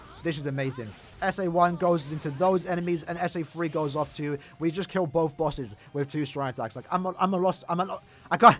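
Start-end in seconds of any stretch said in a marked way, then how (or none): 6.9-8.6 broken-off, halting stutter, words failing. A player, stunned after killing both bosses with two attacks: stuttering, at a loss for words. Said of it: "I'm stuttering".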